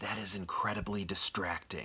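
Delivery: biting, harsh, pointed, unvoiced half-whisper. Retelling leaning behind someone's ear at a movie: imitating a harsh half-whisper. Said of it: "a harsh whisper".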